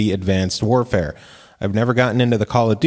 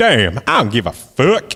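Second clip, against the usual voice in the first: imitated Harlem accent; 3 semitones higher than usual. Contrasting the voice with another version: Harlem accent. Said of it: "That's Harlem".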